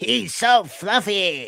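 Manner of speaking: put-on high-pitched, small little girl voice. Quoting a favorite bit from a movie, imitating the little girl. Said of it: "That's a good impression".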